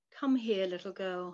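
plain

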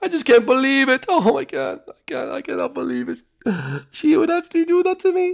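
very high, sobbing, tearful crying speech. Chef Mario answers another character during cleanup, crying while talking. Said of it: "I know you're crying".

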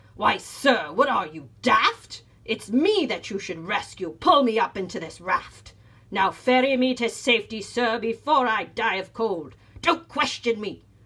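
loud, barked, barking delivery. Mr. payne, in the water, orders the captain to rescue him; barked. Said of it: "barked Mr. Payne".

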